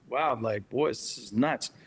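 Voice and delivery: ordinary talk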